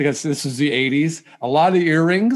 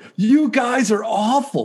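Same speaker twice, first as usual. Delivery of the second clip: high, mock drunk, heckling yell; 7 semitones higher than usual. Retelling how a drunk guy yelled at them as kids, imitating a drunk guy's yelling. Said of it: "and he's yelling".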